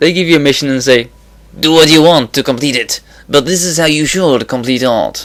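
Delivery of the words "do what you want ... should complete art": mock French-accented speech. Quoting what a game company tells players, Ubisoft in a French accent. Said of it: "that's a French accent there".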